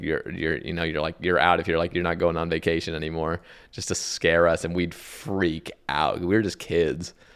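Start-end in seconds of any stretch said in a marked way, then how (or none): none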